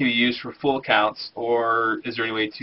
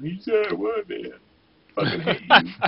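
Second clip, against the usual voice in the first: put-on angry voice, higher pitch; 8 semitones higher than usual. Imitating a viewer who was told he didn't win: imitating Garbrick being mad. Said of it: "Garbrick's gonna be all mad at me".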